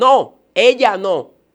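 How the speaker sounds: high, forceful, fierce demon shout. Retelling what a demon shouted at the alley entrance: imitating a demon shouting. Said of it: "el demonio grita de allá afuera y dice".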